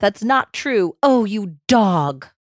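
mock screamed, loud.

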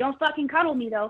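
playful, kidding tone. Retelling a warning to a guy sharing the speaker's bed: retelling a joking warning. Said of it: "I said jokingly".

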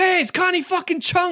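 mock, shrill, high-pitched shout. Retelling a movie scene where one character shouts at another, retelling a shout. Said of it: "she gets shouted at by Jay and Silent Bob".

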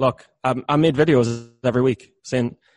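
ordinary delivery

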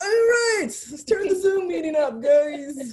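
play-acted, very high, booming, loud call-out. Showing how the voice comes out on a zoom meeting: imitating own loud voice. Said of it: "My voice just automatically be like".

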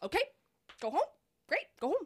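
theatrical drama-teacher delivery. Retelling a woman's reply to the speaker, in a theater-teacher voice. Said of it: "sounds like a theater teacher, just the way you did that".

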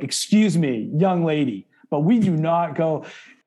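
slow, stern, strict scolding, acted out. A speaker acts out how they talk to a young girl, retelling a scolding tone. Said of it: "If I use that quote unquote tone of voice".

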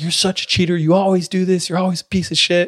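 put-on, high-pitched, accusing screaming. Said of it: "they're just screaming at each other".

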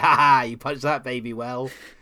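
cruel, loud, nasty jeering and gloating. Imitating a companion praising cruelty in a BioWare game: imitating a horrible companion. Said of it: "a horrible person will say".

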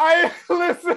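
high, loud laughing.

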